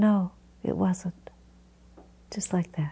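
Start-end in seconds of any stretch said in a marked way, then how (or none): 0.0-1.3 heartfelt, sincere and sweet tone. Recalling a woman married sixty years answering him, re-enacting a sincere, sweet reply. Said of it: "so sincerely and so sweetly said".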